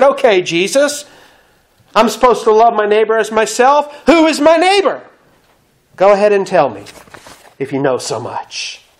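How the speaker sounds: acted condescending, haughty, demeaning superior tone. Retelling the lawyer's question to Jesus: imitating a haughty, demeaning tone. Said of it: "Almost in a haughty, demeaning manner".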